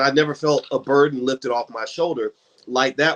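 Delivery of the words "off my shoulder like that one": normal talking voice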